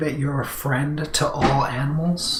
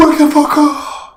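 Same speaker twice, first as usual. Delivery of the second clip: metal scream voice, much higher and louder; 13 semitones higher, 10 dB louder than usual. Needing to wake up before playing hard rock: metal scream voice. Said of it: "my best impression of a metal voice".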